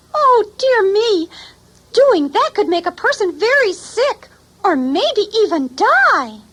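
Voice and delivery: very high, squeaky bookworm puppet voice. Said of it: "this is my friend, Squeegee, the bookworm".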